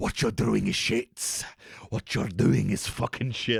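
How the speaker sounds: put-on monster-like voice with a Welsh accent. Describing FOMO as a symbiote speaking to the speaker, Venom voice in Welsh accent. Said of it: "speaking in that venom Welsh accent".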